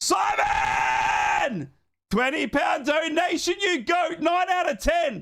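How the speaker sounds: very high, loud, excited shout.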